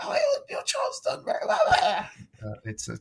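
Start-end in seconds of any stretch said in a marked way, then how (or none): 0.0-1.6 soft, breathy whispered croak, voice nearly gone. Retelling losing their voice at parents' evening, imitating a croaky voice. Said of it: "I was just like croaking at them".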